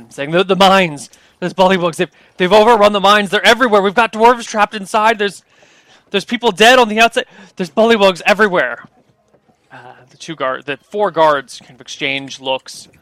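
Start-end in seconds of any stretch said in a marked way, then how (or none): 0.3-8.9 dwarf voice, panting, higher, louder, faster. Voicing a dwarf who comes running up to the guards, panting dwarf voice. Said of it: "the dwarf comes panting up to them".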